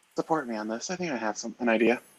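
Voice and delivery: hushed, secretive, conspiratorial half-whisper. Voicing a character asking an ally for support in passing: half-whispering. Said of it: "she passes by Crimson and whispers".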